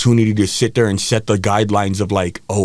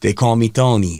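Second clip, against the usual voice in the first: put-on Italian accent. Retelling a teenage alter ego at parties: imitating own past italian accent. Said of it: "I used to talk in just Italian accent".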